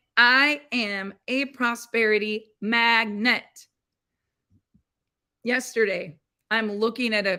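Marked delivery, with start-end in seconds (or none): 0.2-3.4 slow, firm, full conviction. Showing how to say an affirmation: said with conviction. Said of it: "Say it like you mean it".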